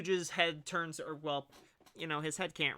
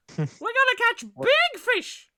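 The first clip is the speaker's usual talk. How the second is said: put-on excited character voice, higher and louder; 13 dB louder than usual. Voicing Lil Puff clapping behind him: Lil Puff voice. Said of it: "Lil Puff is just behind him clapping, like".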